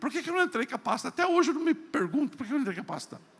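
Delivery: high, fast, excited exclaiming outburst.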